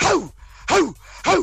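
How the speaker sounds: high barking like a dog.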